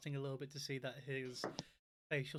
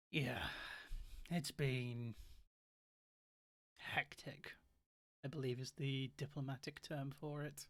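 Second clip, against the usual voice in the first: slow, sour, resentful, bitter tone. Voicing a tired official apologizing for his lateness: bitter voice. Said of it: "You can sense a kind of bitterness in his voice".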